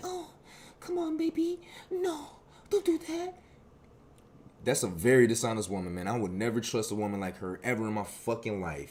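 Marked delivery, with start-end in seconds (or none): 0.0-3.3 tiny, very high, soft, drawn-out coaxing sweet voice. Retelling how a woman answered after being warned again: imitating a little soft voice. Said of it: "now she wanna switch her tone up".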